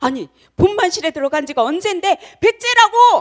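high, loud shouting.

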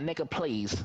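put-on American accent. Retelling what he said to a guy the other day: american accent. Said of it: "I walked around an American accent and I was like, ... like that".

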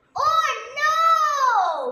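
very loud cry with no stretched out. A witch, hearing a dragon plan to eat her, cries out. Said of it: "cried the witch".

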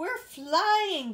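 high, loud giggling through the words. Narrator reads Baby Bop as the ship rises into the air, giggling. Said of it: "giggled Baby Bop".

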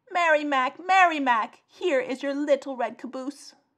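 loud, high-pitched shout. The little red caboose calls out to Mary Mac: shouting. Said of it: "shouted the caboose".

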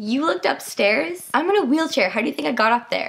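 put-on snarky, sassy twelve-year-old smart-alec sarcasm. Retelling snapping back as a twelve-year-old in a wheelchair: mock smart-ass sarcasm. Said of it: "me in my fucking 12-year-old smart ass voice was like".

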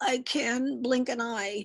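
groaning, very slowly dragged out. Narrator reading a character's reply to a family, groaning. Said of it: "groaned Droofus".

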